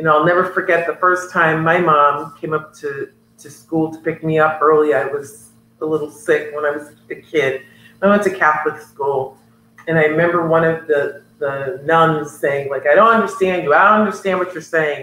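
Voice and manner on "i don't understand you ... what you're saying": ordinary talk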